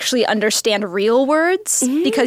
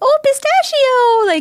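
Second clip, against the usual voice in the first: put-on baby-talk voice, much higher, louder; 4 dB louder than usual. Speaker shows how they call their dog, in a baby dog voice. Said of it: "a baby dog voice".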